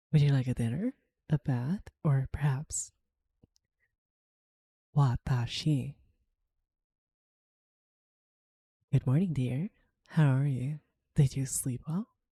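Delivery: soft whisper. Greeting a listener close to the microphone: whispering. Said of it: "me whispering into your ears".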